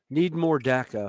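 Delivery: ordinary talk, nothing marked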